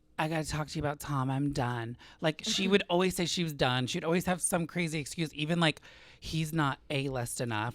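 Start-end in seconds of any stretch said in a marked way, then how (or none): 0.2-2.0 put-on slurred drunk speech, quieter. Retelling how a woman would phone during the day; imitating slurred drunk speech. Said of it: "slurring her words".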